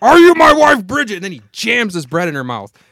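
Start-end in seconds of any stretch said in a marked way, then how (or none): 0.0-1.1 very loud, high, shrill yell. Acting out a man yelling at Bridget, retelling a yell. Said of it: "as he's yelling at her".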